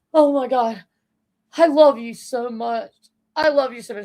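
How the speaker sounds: put-on weepy, overcome, sobbing outburst. Retelling how she reacted on seeing him: imitating someone crying. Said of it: "she just broke out into tears".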